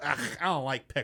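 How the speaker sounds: put-on picky child's sudden disgusted yuck. Retelling how the kids react once pickles reach their plate: imitating kids' disgust. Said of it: "they go".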